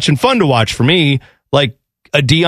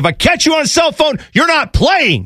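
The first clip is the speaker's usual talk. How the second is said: put-on very high, furious, angry scolding tirade; 11 semitones higher than usual. Retell how he lit into the guys getting ready in the locker room, acting out an angry tirade. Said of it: "lit into these guys".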